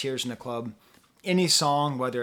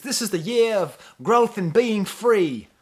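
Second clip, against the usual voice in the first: put-on British accent, raised and high, inspirational tone; 7 semitones higher, 6 dB louder than usual. Speaker imitates a supportive male voice heard on the album: British accent. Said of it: "as good as I get for a British accent".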